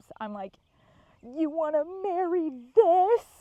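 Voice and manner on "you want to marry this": mock sobbing, very loud, high-pitched cry. Retelling a night of searching, quoting herself through sobs: retelling a line through fake sobs. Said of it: "in between my sobs".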